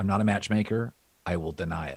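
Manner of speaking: normal talking voice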